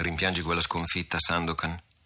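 plain

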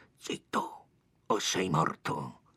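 hushed, menacing murmur, very slow and drawn out. Narrator voicing two bandits threatening a boy, hushed and menacing. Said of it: "due voci sommesse a destra e a sinistra che dicono in tono minaccioso".

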